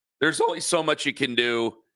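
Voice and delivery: voice cracking. Talking about a baseball team's pitching: voice cracking. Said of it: "My voice just cracked".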